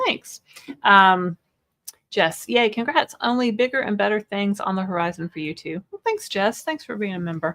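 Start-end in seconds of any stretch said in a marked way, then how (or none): none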